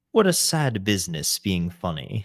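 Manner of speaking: attempted British accent, loud, sing-song and lilting. Quoting a line from a movie, trying a British accent. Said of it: "I'll try to do a British accent".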